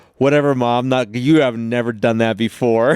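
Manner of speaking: put-on young girl's sassy, dismissive tone. Retelling the girl's reply to her mom: imitating a young girl talking back. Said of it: "And she goes".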